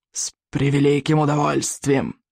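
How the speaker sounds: sibilant, hissed dragon voice. Narrator reads a young dragon answering in dragon speech; hissing. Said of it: "прошипел он".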